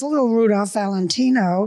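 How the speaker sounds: normal talking voice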